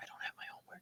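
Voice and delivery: whispering. Acting out telling a teacher about missing homework: imitating a whisper. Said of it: "just whispering".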